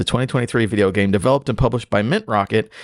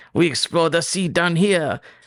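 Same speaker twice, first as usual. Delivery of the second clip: French accent with the pitch raised; 7 semitones higher than usual. Opening a video game podcast episode, Jacques Cousteau French accent. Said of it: "This is my French accent".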